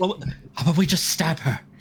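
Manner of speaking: whispered voice. Answering the group after being asked about saying it aloud, whispering. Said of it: "I whisper".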